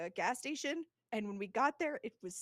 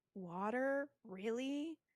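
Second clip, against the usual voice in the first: mock hesitant, unsure, doubtful, second-guessing tone; 3 dB quieter than usual. Retelling how the guy at McDonald's reacted to your water order, imitating an unsure voice. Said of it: "Like he just sounded so unsure".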